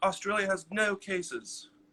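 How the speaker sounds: put-on soft English accent. Asking someone in Melbourne about case numbers, the speaker slips into an English accent. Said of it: "why did I just do an English accent there?".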